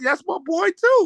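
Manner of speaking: excited, high-pitched cheer.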